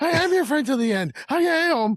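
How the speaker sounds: very high-pitched, loud screaming. Retelling the doll's catchphrase: imitating Chucky screaming. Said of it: "He starts screaming it".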